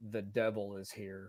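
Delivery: hushed, close half-whisper. A character leans close to the priest and speaks into his ear, half-whispering. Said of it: "and whisper in his ear".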